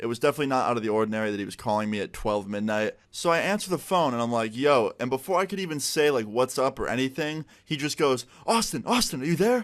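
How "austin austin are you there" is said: mock excited, high, hyped-up yelling. Retelling a midnight phone call where the caller was yelling: imitating the caller yelling. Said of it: "And he's like yelling".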